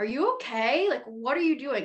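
high-pitched, half-yelled mild yell. Retelling what a partner at the time yelled: imitating someone yelling. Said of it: "was yelling at me".

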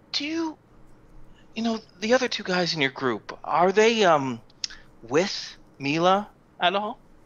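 whispered, close and hushed. Retelling how a character leans over to ask another character something, leaning in and whispering. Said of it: "he leans over and he whispers".

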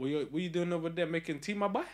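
put-on, attempted Southern American accent. Teasing a woman who is making him tea, trying a southern american accent. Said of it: "trying to go like Southern America".

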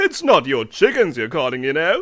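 snickering jibe, very loud. Narrator reading the prince's remark as the princess calls the unicorn, snickering prince. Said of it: "The prince began to read a magazine".

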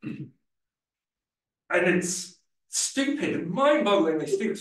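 worked-up, angry, very high-pitched rant. Explaining how a machine runs out of memory, getting angry. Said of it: "I'm getting angry now".

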